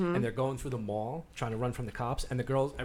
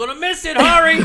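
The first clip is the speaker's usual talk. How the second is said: very high, very loud, urging scream; 15 dB louder than usual. Retelling a movie scene where a character yells at another: imitating someone screaming. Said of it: "He's screaming at him in Spanish".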